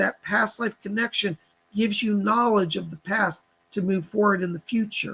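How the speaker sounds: normal talking voice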